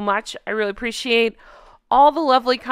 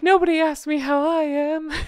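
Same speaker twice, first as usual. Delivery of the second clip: high, fake-crying voice with put-on tears; 6 semitones higher than usual. Repeating the line with a fake tear: imitating Megan with fake tears. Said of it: "should I say it with a fake tear".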